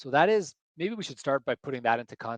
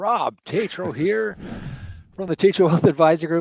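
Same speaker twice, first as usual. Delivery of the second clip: very loud, booming on-air radio announcer voice; 4 semitones higher, 9 dB louder than usual. Opening a live stream for your wealth advisor group: radio voice. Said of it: "This is my radio voice".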